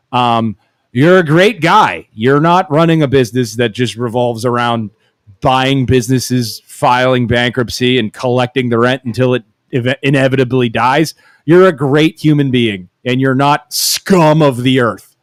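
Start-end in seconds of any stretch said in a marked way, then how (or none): none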